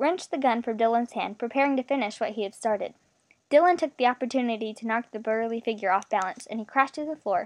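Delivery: plain reading voice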